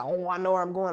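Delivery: ordinary delivery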